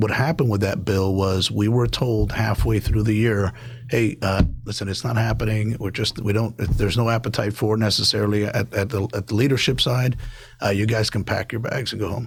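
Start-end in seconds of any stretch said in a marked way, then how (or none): none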